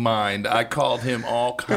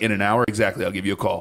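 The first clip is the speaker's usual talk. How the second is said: plain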